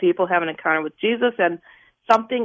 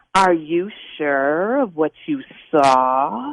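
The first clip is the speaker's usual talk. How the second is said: low serpentine demon hiss, stretching "saw"; 4 semitones lower than usual. Recounting a demon over your shoulder questioning you, in a snake-like voice. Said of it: "saying with a snake-like voice".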